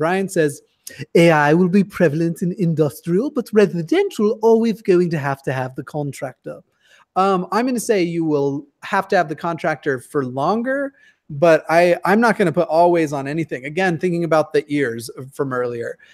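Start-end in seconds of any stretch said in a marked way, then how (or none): 1.1-6.6 posh British accent, cartoonish. Reading out a comment from a viewer, the host uses his Stewie accent. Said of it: "I'm going to do my Stewie accent".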